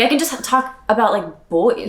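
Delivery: ordinary talk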